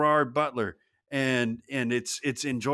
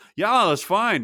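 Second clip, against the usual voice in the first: put-on Scottish accent, loud, high, laid-back; 6 semitones higher, 6 dB louder than usual. Imagining phoning Gerard Butler and his reply: Gerard Butler Scottish accent.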